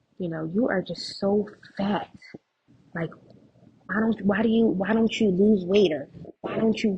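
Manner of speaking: mock-bitter woman's voice. Telling her sister about a lady who called her fat; imitating a bitter woman. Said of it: "she was very, very bitter".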